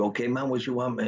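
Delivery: put-on heavy Puerto Rican accent, laid on. Telling of being pinned under a truck, the speaker quotes a man, imitating Puerto Rican accent. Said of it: "had a thick Puerto Rican accent".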